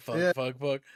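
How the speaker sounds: ordinary talk, nothing marked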